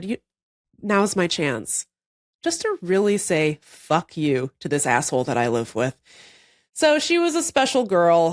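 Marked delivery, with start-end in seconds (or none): 0.0-6.0 speaking in a cat's voice. Retelling the cat soiling the hand-sewn duvet cover: voicing the cat. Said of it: "And she said".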